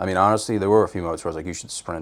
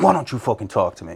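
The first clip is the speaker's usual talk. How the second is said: abrupt, sudden furious snapping outburst; 4 semitones higher than usual. Retelling a date's sudden switch in mood, imitating someone snapping angrily. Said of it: "then she would snap".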